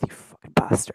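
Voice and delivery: barely voiced whispered mutter under the breath. Narrating a scene where one man glares at another, muttering under the breath. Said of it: "muttered under his breath".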